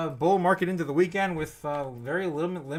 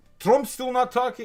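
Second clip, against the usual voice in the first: higher-pitched put-on Russian-sounding accent; 7 semitones higher, 4 dB louder than usual. Quoting what China might say about the tariffs: Russian-sounding accent. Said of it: "Why am I talking like a Russian?".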